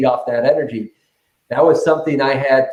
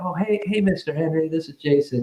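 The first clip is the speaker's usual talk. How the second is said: dialed down, soft, low-key, low-energy delivery; 3 semitones higher, 6 dB quieter than usual. Speaker retelling how he greeted an older man on a phone call, retelling a dialed-down phone greeting. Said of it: "I really dialed it down".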